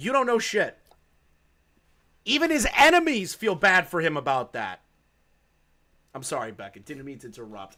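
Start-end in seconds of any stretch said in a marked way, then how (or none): 0.0-4.8 angry shouting, higher. Ranting about someone who doesn't understand the history, yelling. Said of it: "I'm just yelling".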